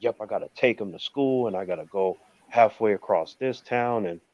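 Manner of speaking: upset, complaining tone. Retelling friends complaining about driving their kids, imitating upset friends. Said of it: "they seem so upset".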